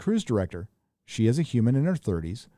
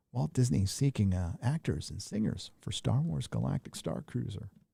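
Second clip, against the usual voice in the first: put-on radio voice, much quieter; 3 semitones lower, 9 dB quieter than usual. Host reading a news article aloud to listeners, NPR voice. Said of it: "We'll use our N P R voices".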